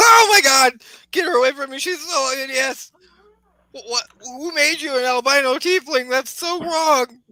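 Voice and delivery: shrill, horrified, terrified shriek, very high. Voicing a frightened wizard recoiling from a tiefling: shrieking in terror. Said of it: "shrieks and looks at you and goes".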